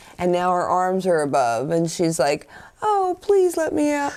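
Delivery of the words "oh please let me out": put-on very high, childlike little girl voice. Retelling a scene where a locked-in girl pleads, little girl voice. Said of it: "Switches back to the little girl voice".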